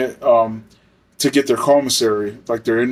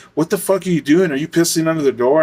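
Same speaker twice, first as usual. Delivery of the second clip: put-on, mild, half-yelled delivery; 3 semitones higher than usual. Retelling how a woman walked to the cell and yelled at the inmate, retelling a yell. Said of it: "starts yelling at the inmate".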